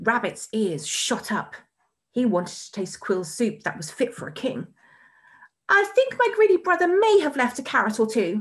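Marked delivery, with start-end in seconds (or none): 5.7-8.4 sudden, high, blurted-out voice. Rabbit, wanting to taste the soup, tells Noko: blurting out. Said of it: "he blurted".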